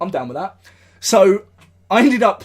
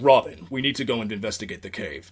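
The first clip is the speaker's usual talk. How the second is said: commanding, authoritative voice; 8 semitones lower, 7 dB quieter than usual. Showing how Batman gives orders to Robin: Batman giving orders. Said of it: "like when Batman's giving orders".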